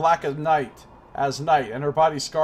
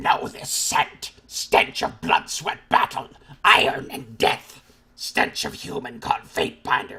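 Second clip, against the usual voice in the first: beast-woman voice, forced and strained from the throat; 2 semitones lower than usual. Narrating a story, voicing the beast woman's lines in a throat-straining voice. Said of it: "trying to do that voice is going to hurt my fucking throat".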